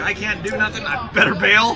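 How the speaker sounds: ordinary delivery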